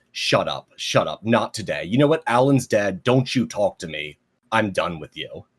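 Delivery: sharp, angry snapping tone. Recapping a comic, voicing one character snapping at another, snapping angrily. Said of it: "snaps and just goes".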